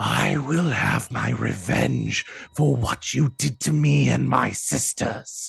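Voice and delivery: loud, echoing, rasping, ghostly shriek. A possessed figure levitating above the ground addresses all the players, echoing ethereal screech. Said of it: "in this echoing uh ethereal voice uh screeches out".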